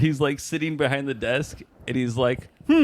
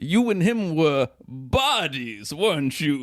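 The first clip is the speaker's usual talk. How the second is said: acted old-fashioned Victorian-sounding accent. Quoting a favorite line from Garth Marenghi's Dark Place: Matt Berry impression. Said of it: "that guy's so fucking funny with that accent".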